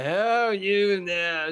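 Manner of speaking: put-on Scottish demolitions man voice. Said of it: "Just like the".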